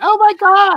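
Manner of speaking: very high, shrill, high-pitched squealing outcry. Mimicking a Seattle fan's reaction to the call, in a high-pitched fan voice. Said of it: "with a high pitched voice".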